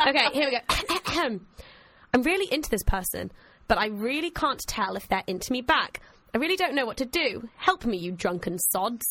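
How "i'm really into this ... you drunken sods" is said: ordinary talk, nothing marked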